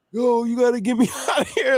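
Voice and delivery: shrill, very high, crazed screaming. Retelling how a cellmate in a flooded cell yelled: imitating someone screaming. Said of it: "and he's screaming".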